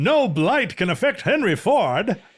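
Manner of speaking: put-on high, mid-Atlantic accent. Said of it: "the mid-Atlantic accent".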